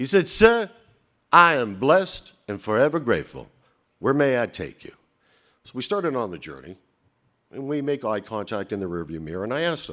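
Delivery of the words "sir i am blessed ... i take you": put-on loud, laid-on Southern accent, drawled. Retelling a car ride, quoting the driver's answer, in a Southern drawl. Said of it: "with a Southern drawl".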